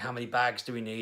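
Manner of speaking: ordinary delivery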